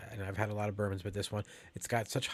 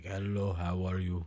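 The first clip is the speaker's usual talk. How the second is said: put-on Russian accent in a big man's voice; 2 semitones lower than usual. Joking that a man looks like a gigantic Russian dude: put-on gigantic Russian dude voice. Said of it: "He looks like a gigantic Russian dude, like".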